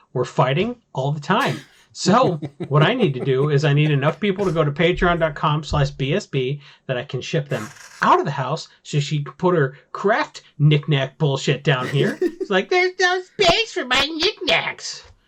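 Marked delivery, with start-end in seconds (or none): 12.6-15.0 very high, complaining voice. A husband imitates his wife for the listeners, imitating Brittany's voice. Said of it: "That's literally how she talks".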